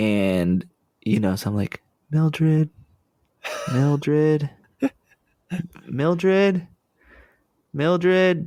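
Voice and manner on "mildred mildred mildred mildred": put-on repeated calling, building louder each time, pitched up. Retelling calling out a woman's name at her house, calling louder and louder. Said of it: "just louder and louder".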